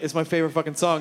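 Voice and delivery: ordinary talk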